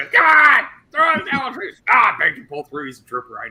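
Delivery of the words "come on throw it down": high, loud urging shout. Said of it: "And he's like".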